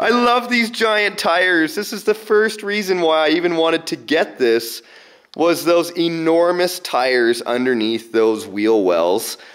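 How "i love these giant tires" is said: laughing, delighted, pitched-up voice. Admiring the giant tires on something he just got: laughing while talking.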